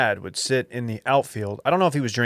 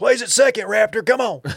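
play-acted shrill, high, loud country holler; 11 semitones higher, 5 dB louder than usual. Imitating a friend cheering at a baseball game: imitating Dylan's country baseball yelling. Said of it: "That's how you sound when you're yelling".

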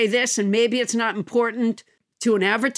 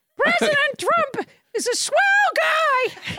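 very high, dopey cartoon dog voice. Asked by another speaker to do a Goofy, the speaker performs a Goofy voice. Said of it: "Here's my Goofy".

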